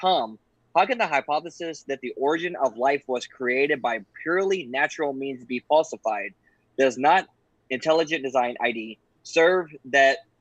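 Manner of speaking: ordinary delivery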